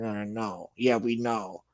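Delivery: put-on mutter under breath. Retelling what someone said in a livestream: imitating someone muttering under his breath. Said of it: "under his breath saying".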